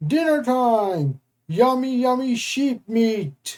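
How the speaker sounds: high-pitched storybook monster voice. Reading a story aloud, voicing the monster: bellowing monster voice. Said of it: "The monster bellowed".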